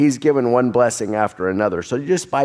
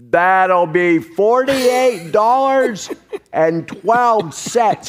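deliberate, over-loud, slow, pitched-up, spelled-out speech; 8 semitones higher than usual. Retelling a cashier speaking to a wheelchair user: imitating slow, loud speech. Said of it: "she said really slow and really loud".

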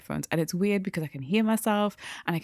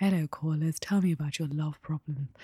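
put-on, sultry, sexy radio voice; 2 semitones lower than usual. Demonstrating the radio voice people expect from the speaker: sexy phone voice. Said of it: "sexy phone voice".

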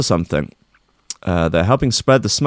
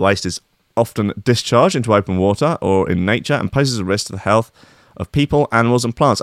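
usual speaking voice

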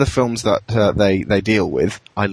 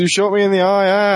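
screamed delivery; 10 semitones higher than usual. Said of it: "he screams and holds his eye and goes".

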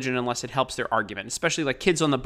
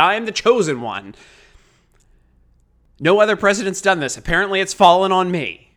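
mock, dripping sarcasm, raised and pitched up; 5 semitones higher, 6 dB louder than usual. Retelling what Donald Trump said while looking to the sky, imitating someone's sarcasm. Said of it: "he sarcastically looked to the sky and said".

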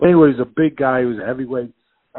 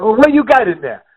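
put-on raised-pitch Puerto Rican accent; 9 semitones higher, 5 dB louder than usual. Retelling what Willie asked, imitating Willie's Puerto Rican accent. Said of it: "in his Puerto Rican".

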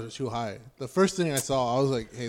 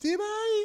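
very high-pitched, guilty, playing-dumb voice. Retelling own past reply when reminded of something: way higher-pitched voice. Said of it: "your voice get, like, way higher in pitch".

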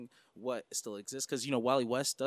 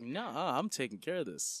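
sassy, slow, swooping, sarcastic dismissive voice. Acting out a line of Starro, who talks back: imitating sarcastic Starro. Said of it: "He's sarcastic".

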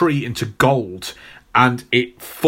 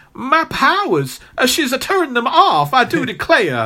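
squealing cartoon voice, much higher; 12 semitones higher than usual. Describing the cartoon version, voicing Rogue's reaction: Rogue impression with squeal. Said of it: "With that little squeal she does".

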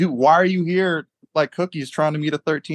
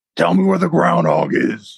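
put-on rough, creaky gravelly voice, pitched up; 6 semitones higher, 4 dB louder than usual. Asked to copy a gravelly voice, the participant tries a line: gravelly voice. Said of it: "Yes, like that".

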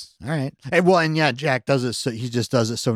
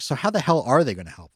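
normal talking voice

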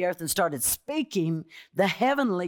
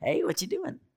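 lively, varied, casual everyday intonation; 6 semitones higher, 3 dB quieter than usual. Showing how one talks to a friend: talking with inflection. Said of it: "I talk with inflection".

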